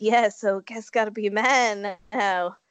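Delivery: acted-out forlorn, mopey, resigned dad voice. Describing how a man talked about becoming a dad, imitating a forlorn Teen Mom dad. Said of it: "he said it in kind of the forlorn way".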